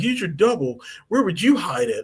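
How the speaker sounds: play-acted, angry, irritated, pissed-off tone, no rising tune. Retelling a scene where Quinn yells at the professor: Quinn yelling angrily. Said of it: "Quinn yells at him".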